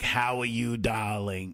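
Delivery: put-on slow, drawling old woman's lifelong-smoker voice. Pitching a character idea for the show, a great aunt: Edna, smoker great-aunt voice. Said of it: "a great aunt, like Edna, who was a smoker".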